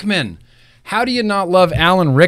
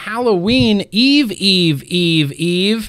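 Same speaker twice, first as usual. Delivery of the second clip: usual speaking voice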